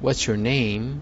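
slow, rising intonation on name. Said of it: "this sound goes a little bit higher at the end if it's a question".

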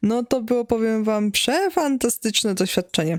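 dry, ironic, sarcastic, clearly not meant. Telling the audience about cakes that got eaten before use, sarcastic. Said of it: "Oczywiście to jest sarkazm".

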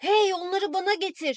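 high-pitched shout, calling out down a hallway. Ramon shouts after his sister Marisol as she walks away: shouted. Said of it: "diye bağırdı arkasından".

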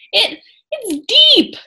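gasping. Annie, splashing in deep water, calls to Jack, gasping. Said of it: "she gasped".

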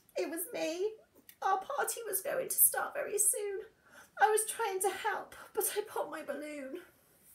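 small, trembling, shaky, high little voice. A hare answers the angry bear it woke, in a small, shaky voice. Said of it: "Hare said in a small, shaky voice".

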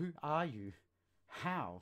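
very loud, strained, drawn-out high cry. Reading a character's question to an unseen stranger in the darkness: strained voice. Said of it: "His voice strained out".

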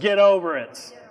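insistent, forceful, commanding, demanding delivery. Speaker repeats a line to the audience: more demanding voice. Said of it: "maybe some of y'all need to hear it with a more demanding voice".

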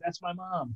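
barely audible, hushed, very quiet half-whisper. Retelling the man's half-whispered reply in line: imitating someone half-whispering. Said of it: "he whispered back".

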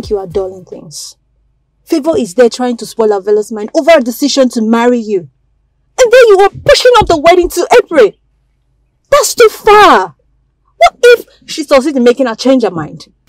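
agitated and worked up. Worried the bride may change her mind before April, agitated and worked up. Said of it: "are you going to calm down?".

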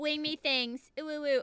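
passive-aggressive pet voice. Imagining what a pet would say: passive-aggressive Princess voice. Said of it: "Princess would probably be really passive-aggressive".

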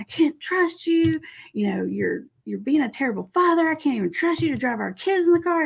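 high, out-of-control, furious tirade. Retelling how a mother confronted the father by phone: acting out her losing it. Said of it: "She's like losing it".

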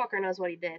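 mumbling under breath. A game master voices a questioned character after a silence, muttering. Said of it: "almost as a kind of a muttering tone".

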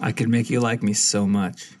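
creepy put-on tone, cult-leader style. Joking to the other guests that they'll like you: mock creepy voice. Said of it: "those creepy sort of comments".

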